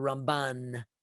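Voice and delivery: Ramban with stress on second syllable ban. Saying Nachmanides' name, contrasted with Rambam: stress on second syllable of Ramban. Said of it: "we accent it on the second syllable".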